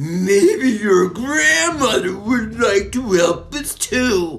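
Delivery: high, loud, tittering, giggly jeering tone. One of two captors taunting a struggling boy, giggling. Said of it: "giggled Murkle".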